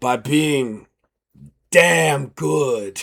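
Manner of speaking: put-on very slow, tipsy, drunken drawl. Voicing a character who is getting pretty drunk: acting drunk. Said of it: "she's getting pretty drunk at this point".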